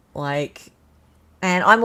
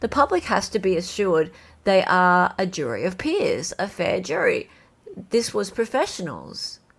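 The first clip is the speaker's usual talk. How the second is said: normal talking voice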